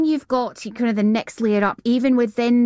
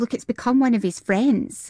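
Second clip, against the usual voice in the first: ordinary delivery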